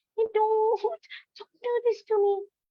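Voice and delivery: squeaky, very high-pitched character voice. Showing how to change voices for story characters, going all squeaky. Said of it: "or you go all squeaky".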